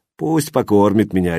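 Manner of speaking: plain reading voice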